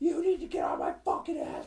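whispered yell, mildly angry. Speaker retells a driver who got out of her car to shout: imitating a woman yelling. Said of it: "Fucking yelling at me".

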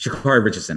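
blurted out, rattled off very fast. Revealing a name after a drum roll, name said very fast. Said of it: "I wanted to say it fast because that's she's faster than that".

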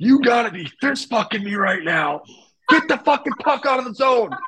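acted, very high, shrill, full-lunged yell. Telling how a guy stood up on the bench, imitating yelling at top of lungs. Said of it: "yells at the top of his lungs".

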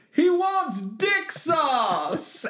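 high, slow, stretched-out yell. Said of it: "you hear [name] from behind us in the car yell".

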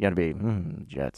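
said softly under breath. Showing how a Jets fan has to say the team name, softly under breath. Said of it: "why'd you say Jets so softly and under your breath?".

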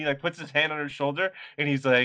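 ordinary talk

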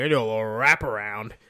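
put-on drunk voice. Retelling a Trailer Park Boys scene: Mr. Lahey drunk voice. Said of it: "Dude's, like, pissed drunk. He's like".

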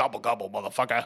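really deep, dark, horror-movie demonic voice. Quoting a killer turkey's catchphrase from a movie: imitating a deep demonic voice, like Freddy Krueger. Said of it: "really deep, kinda demonic".

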